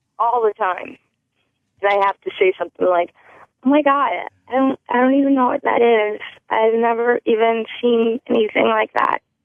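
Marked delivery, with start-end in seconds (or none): 3.7-9.2 put-on girlish, youthful-sounding young girl voice. Acting out a reply given on calls: put-on young girl voice. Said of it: "You sound young".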